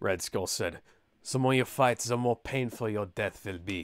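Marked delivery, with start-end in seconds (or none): 1.3-3.9 bad German accent slipping into Spanish, quieter. Reading Red Skull's threat aloud: bad German accent bleeding into Spanish. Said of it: "my German accent is bleeding into Spanish".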